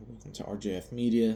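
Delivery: ordinary talk, nothing marked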